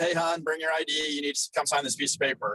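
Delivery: plain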